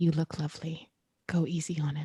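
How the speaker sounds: hellish half-whispered voice. A player leans to her ear before heading to the kitchen: half-whispering in Infernal. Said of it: "just in infernal whisper to her".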